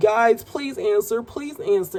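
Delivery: mock urgent, frantic pleading, screaming. Retelling a film character calling her two friends: imitating someone screaming. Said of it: "she's literally screaming".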